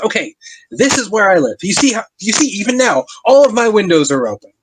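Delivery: high, worked-up, indignant, agitated woman's voice. Narrating a game, voicing the townswoman who leads the players to her cottage: shouting townswoman character voice. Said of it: "and there is a person standing out in the snow arguing with a guard who is out there. She is shouting and she's like, you know, just screaming and like screaming at the guard and then ye- yelling out".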